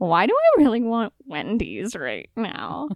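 confused, bewildered, baffled tone with swooping pitch. Retelling what Quintonimus asked on the way home: imitating Quintonimus sounding confused. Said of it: "very confused".

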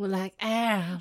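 put-on southern twang. Reading a romance line aloud, then repeating it: Jennifer Coolidge voice. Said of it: "It sounds like, um, Jennifer Coolidge".

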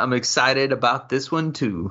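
ordinary talk

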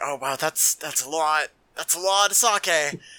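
put-on mumbling, slowed way down. Retelling a scene, acting out Amagai as Kira pours sake: mumbling as Amagai. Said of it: "kind of mumbles".

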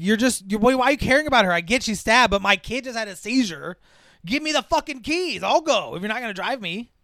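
furious, loud, high-pitched angry yell. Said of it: "he's yelling about his keys".

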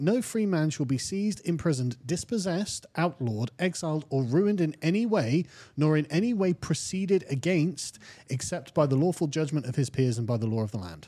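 normal talking voice

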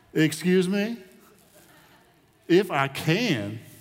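put-on, very drawn-out, slow sarcastic delivery. Acting out a reply to a doubting father: put-on sarcastic reply. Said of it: "almost sarcastically".

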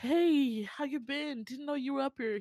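high, fake-cheerful, put-on friendly voice. Retelling a drama scene, a character greeting a rival: imitating a fake cheerful greeting. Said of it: "He puts on his weasel face".

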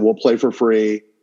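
normal talking voice

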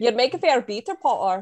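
put-on Scottish accent. Quoting how he speaks to potter, in a scottish accent. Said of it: "bowl me over with a Scottish accent".

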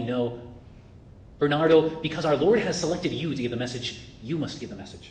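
ordinary talk, nothing marked

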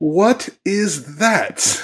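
bewildered, scornful, high-pitched tone. Retelling a man's reaction to an autograph request, with mock confused disdain. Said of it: "with what I can only imagine is confusion mixed with disdain".

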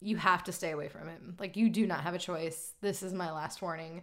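sweetly calm, low, calculating and menacing tone. Retelling a mother's warning to stay away from him: imitating a calm, threatening voice. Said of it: "It's very calm and threatening".

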